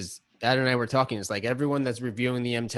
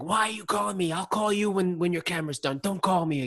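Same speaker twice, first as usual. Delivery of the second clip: mock, high, shrill screaming rant; 7 semitones higher than usual. Retelling a phone call where she screams at him: imitating someone screaming. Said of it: "screams at you".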